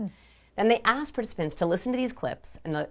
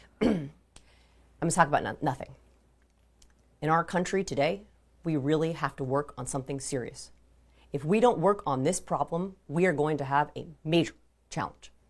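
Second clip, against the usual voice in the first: sentence ends sinking on serious and challenge. Doing a really bad Barack Obama impression: bad Barack Obama impression, falling ends. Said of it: "he still goes down at the end of his sentences".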